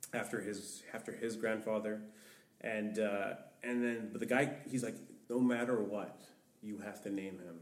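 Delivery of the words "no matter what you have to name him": mock pushy, forceful, aggressive, insistent tone. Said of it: "again, he was getting aggressive".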